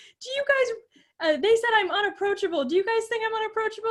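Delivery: teary, very high, crying, pleading voice. Retelling a Cheers scene where the manager has a breakdown: imitating Kirstie Alley's character crying. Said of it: "And she's, like, crying".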